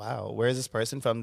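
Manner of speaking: ordinary talk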